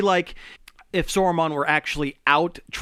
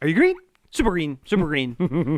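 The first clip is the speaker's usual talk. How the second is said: ordinary delivery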